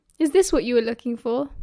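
plain reading voice

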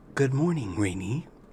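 crackly overhead computer voice. Narrating a story, reading the computer's overhead greeting in a crackly computer voice. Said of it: "the computer voice crackles overhead".

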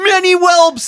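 high-pitched, frantic, freaked-out panic. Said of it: "And he's freaking out".

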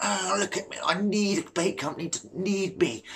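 cringy, boastful bragging tone. Mimicking a boastful carp angler on Facebook: mocking a cringy show-off. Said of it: "Just cringy, like".

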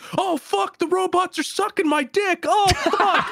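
raw, frantic screaming. Describing a dude charging through an exploding hallway: retelling a scream. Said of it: "an exploding hallway screaming".

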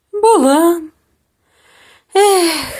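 spoken on a sigh. Narrator reads the little witch answering the raven about her broom, sighing. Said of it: "зітхнула мала баба Яга".

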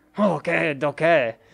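put-on, fake French accent. Saying a catchphrase while playing a game: put-on French accent. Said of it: "can I say okie dokie in that French accent".

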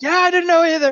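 loud, high yell. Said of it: "he'll yell back".

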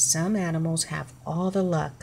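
ordinary delivery

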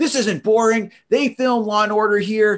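high, indignant, offended shouting. Retelling how a woman yelled at them in front of their group; retelling a woman yelling. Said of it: "she starts yelling at me".

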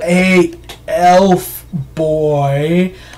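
drawn-out, really slow talking. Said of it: "They start talking, like, really slow".

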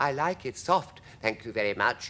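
ordinary delivery, nothing marked

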